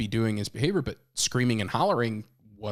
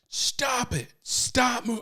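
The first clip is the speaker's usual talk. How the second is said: put-on screaming, higher; 13 semitones higher than usual. Retelling snapping at a child in the tub: imitating himself screaming. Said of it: "I just snapped".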